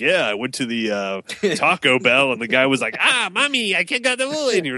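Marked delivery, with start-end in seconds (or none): 3.0-4.5 very high parody voice. Mocking a tv parody like a 1981 racist comedian, doing a mock stereotyped voice. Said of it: "some racist comedian in 1981 was like".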